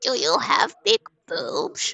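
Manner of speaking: silly, swooping cartoonish voice. Imitating a scam caller from the last call: cartoon-like voice. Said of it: "He sounded like a cartoon".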